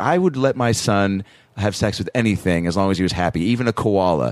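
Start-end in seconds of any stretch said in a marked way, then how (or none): none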